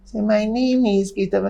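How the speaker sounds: tiny, very high, small, slow voice. Retelling being called over by bullies and asked his name, in his tiny voice. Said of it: "I had such a tiny voice".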